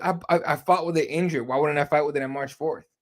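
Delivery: ordinary talk, nothing marked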